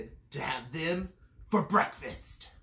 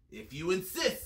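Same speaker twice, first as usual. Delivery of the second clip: ordinary delivery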